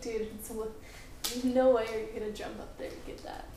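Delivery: plain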